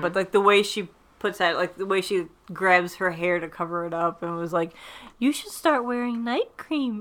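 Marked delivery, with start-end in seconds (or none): 5.2-7.0 gentle, calm, soothing delivery, pitched up. Retelling a character's mean line while covering her hair: imitating a calm voice. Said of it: "she says it such in a, like, calming s-, voice".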